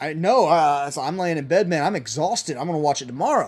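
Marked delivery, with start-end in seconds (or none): none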